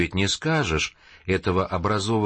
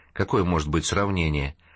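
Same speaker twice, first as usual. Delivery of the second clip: usual speaking voice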